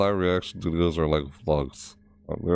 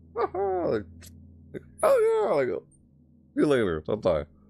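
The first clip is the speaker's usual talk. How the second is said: high-pitched voice breaking and cracking mid-phrase; 9 semitones higher than usual. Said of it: "My voice is doing that".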